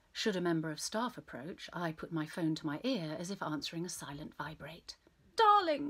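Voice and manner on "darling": put-on posh cut-glass English accent, very high and very loud. Retelling her fake phone call to hotel staff: cut glass accent. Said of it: "I'll say in a cut glass accent".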